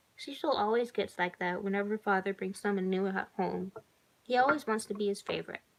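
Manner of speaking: ordinary delivery, nothing marked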